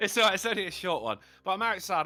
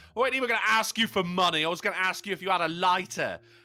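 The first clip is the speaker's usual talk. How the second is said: ordinary talk, nothing marked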